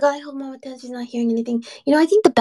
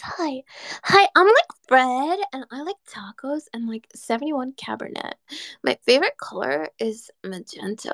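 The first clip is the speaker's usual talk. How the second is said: put-on valley girl talk with swooping pitch. Reading aloud the first valley girl line a search gave, in a valley girl voice. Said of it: "the first Valley Girl line it gave me was".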